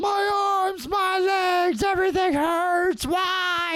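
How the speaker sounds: acted, very high, stretched-out shrieking. Retelling a man who fell and landed on his hip, imitating his screaming. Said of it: "And he's screaming".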